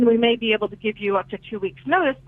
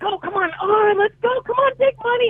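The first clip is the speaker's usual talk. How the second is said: put-on, very high, eager, excited cheer; 12 semitones higher than usual. Retelling an audition where they pretended to spin the wheel: reenacting excited cheering. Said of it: "And I'm cheering and clapping".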